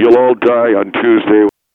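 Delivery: very deep, low, loud put-on butch voice. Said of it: "you did it in the butch voice".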